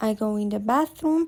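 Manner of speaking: plain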